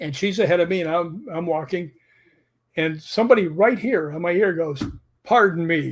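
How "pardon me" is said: mock irritated, kinda mad, annoyed tone. Retelling what an unseen voice said on a walkway: imitating someone kinda mad. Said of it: "kinda mad".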